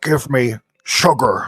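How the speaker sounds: very low, deep, bug-like alien voice. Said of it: "he's like".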